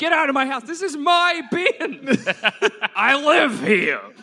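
grumpy, cranky grouch voice, pushed high. Playing the grouch who lives in the bin, ordering someone out: Danny DeVito voice. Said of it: "he sound like Danny DeVito?".

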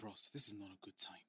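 quiet whispered aside. Retelling a quiet plea to a fan in a mall: imitating a whisper. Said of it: "I whispered to him".

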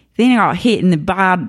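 failed put-on Australian accent attempt. Imitating reader mail full of Australian slang: attempted Australian accent. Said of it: "I can't even do it".

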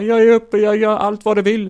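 play-acted, shrill, very high, very loud sobbing. Retelling a film scene where a shoved-around girl starts crying: imitating a woman crying. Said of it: "hon börjar gråta som fan".

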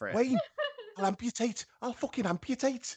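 put-on Scouse accent. Joking in a comedy bit, doing a scouse accent. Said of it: "That was such a good scouser".

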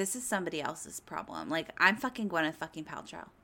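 haughty, diva-like, tossed-off delivery. Imagining skiing away after a crash, acting it out: imitating Gwyneth Paltrow as a diva. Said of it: "having a diva moment".

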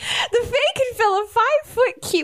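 squeaky, very high-pitched voice. A player in a game answers a request for plain English: Mickey Mouse voice. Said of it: "I don't know why I did that voice".

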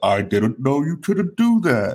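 swooping, animated voice with swinging pitch. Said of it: "You got Dave Chappelle with the".

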